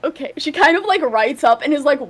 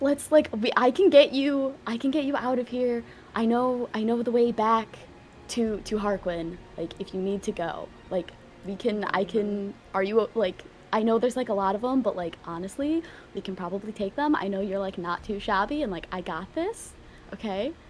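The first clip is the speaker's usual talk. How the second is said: whispering, much quieter; 4 semitones lower, 10 dB quieter than usual. In a role-play, a character covering a stranger's mouth reassures them, whispering. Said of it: "So I'm still whispering".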